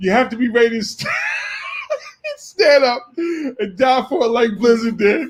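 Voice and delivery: laughing while speaking. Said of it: "Jamel Page said".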